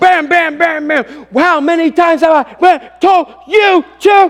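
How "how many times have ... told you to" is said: loud, angry yelling. Retelling scolding a son over a broken nail: imitating own past yelling. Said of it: "And I'm yelling".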